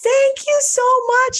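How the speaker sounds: very high-pitched, loud, shouted yell.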